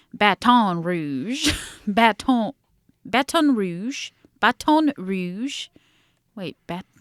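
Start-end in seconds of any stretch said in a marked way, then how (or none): 0.2-5.7 put-on Baton Rouge drawn out slowly in British accent. Speaker imitates how a british documentary said a city name, imitating british pronunciation. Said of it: "a British documentary, so they call".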